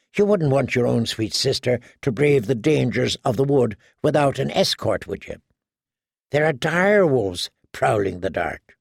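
plain reading voice

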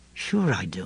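low, dismayed, disheartened voice. In a story, a man answers a remembered question in a low, dismayed voice. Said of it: "he said in a low, dismayed voice".

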